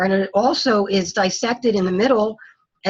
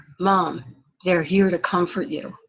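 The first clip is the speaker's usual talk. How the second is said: whisper, lower and quieter; 3 semitones lower, 4 dB quieter than usual. Retelling what her son said on the balcony: imitating a whisper. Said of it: "he whispers in my ear".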